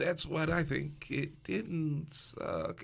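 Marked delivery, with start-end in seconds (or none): 1.1-2.8 unenthusiastic sing-song delivery without any gusto. Judging a scene that barely gets in, flat, no gusto. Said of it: "listen to how I'm saying it with the lack of gusto".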